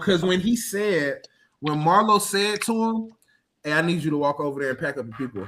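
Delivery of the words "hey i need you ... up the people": mock cool, unbothered, soft, quick, never raised. Retelling what Marlo said to another character, retelling Marlo's calm line. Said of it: "like we said it so calm".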